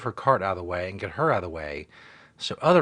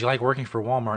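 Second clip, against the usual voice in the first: plain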